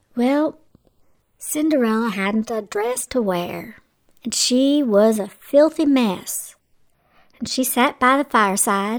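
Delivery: plain reading voice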